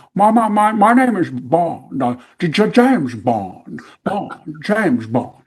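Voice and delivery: very slow drawl with stammering. Picturing an actor playing James Bond: Jimmy Stewart as James Bond. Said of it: "can't picture him in that casino saying".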